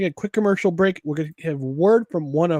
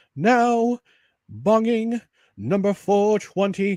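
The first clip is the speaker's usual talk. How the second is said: very slow, drawn-out announcer voice; 4 semitones higher than usual. Host greeting listeners before the first commercial break, in best announcer voice. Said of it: "my best announcer voice".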